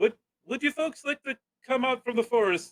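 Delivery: loud call carried across a distance. A game master voices an unseen human calling to the sneaking players: shouting out from afar. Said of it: "a human voice shouting out in common".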